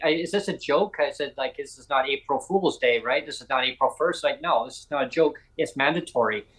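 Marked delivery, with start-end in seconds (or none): none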